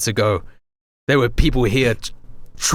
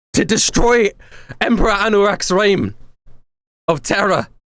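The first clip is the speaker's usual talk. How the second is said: high, desperate, urgent, breathing hard; 8 semitones higher than usual. Voicing a character pleading with the elder: worked up and desperate, breathing heavily. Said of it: "She's breathing heavily now. Very worked up, very desperate".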